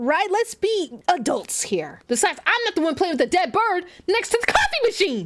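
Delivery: shouting. Arguing with a game character about a dead bird: yelling. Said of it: "I need to stop yelling".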